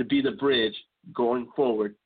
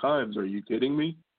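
ordinary talk

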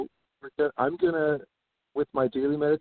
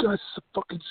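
mock yelling, higher pitch and faster pace; 6 semitones higher than usual. Describing workers yelling at people without masks, retelling a yell. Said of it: "just like yelling".

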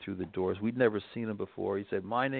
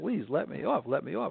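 put-on tearful begging voice, higher; 7 semitones higher than usual. Retelling begging to be let off a speeding motorcycle: retelling a crying plea. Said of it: "I was actually crying on the back of the bike".

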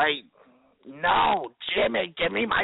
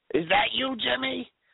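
high-pitched, grubby, dirty put-on old lady voice; 6 semitones higher than usual. Playing Ethel, who is trying to reach Jimmy, in a dirty old lady voice. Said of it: "You sound like a dirty old lady".

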